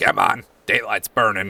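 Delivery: words pushed out around a fat chomped cigar. Voicing a small Lemire in a bowler hat, chomping a cigar: Lemire talking around a cigar. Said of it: "chomping on a real big fat cigar, and he goes".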